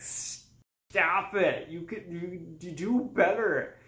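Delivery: frustrated, exasperated shouting. Describing a movie with an unlikable main character, imitating yelling at the tv. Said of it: "constantly yelling at the T V".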